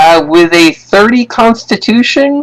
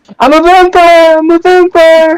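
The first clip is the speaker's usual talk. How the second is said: put-on manic scream, pitched much higher; 10 semitones higher than usual. Correcting a co-host on how someone screamed, imitating Nicolas Cage screaming. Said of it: "I think he was screaming more like".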